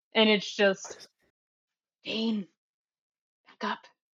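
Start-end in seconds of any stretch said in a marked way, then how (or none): 2.1-3.8 soft, somewhat rasping, raspy tone. Acting out what he says to Dane, in a raspy tone. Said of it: "In a kind of raspy tone".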